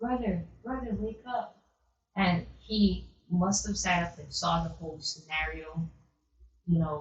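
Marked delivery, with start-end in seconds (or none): 0.0-1.6 put-on small, sweet, tiny high child's half-whisper. Retelling how she woke her brother at three in the morning: tiny sweet half-whisper. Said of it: "she whispered to her brother".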